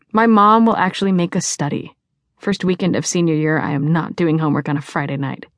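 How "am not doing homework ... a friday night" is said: plain reading voice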